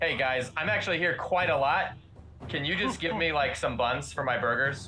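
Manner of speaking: usual speaking voice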